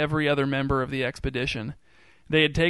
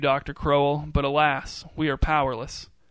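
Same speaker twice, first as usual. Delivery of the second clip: ordinary delivery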